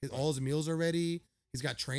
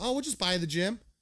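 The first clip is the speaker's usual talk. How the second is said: casual, offhand, nonchalant tone; 4 semitones higher, 3 dB louder than usual. Retelling what a billionaire said to the speaker, mimicking his nonchalant tone. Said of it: "he said it so nonchalant".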